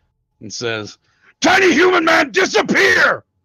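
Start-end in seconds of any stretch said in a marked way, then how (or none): 1.4-3.2 high, loud frustrated growling shout. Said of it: "he growls in frustration".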